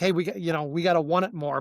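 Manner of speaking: plain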